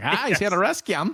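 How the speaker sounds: put-on Maine accent, very high and loud. Imitating a character's accent while recapping a scene, in a Maine accent. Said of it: "It's like Maine or something".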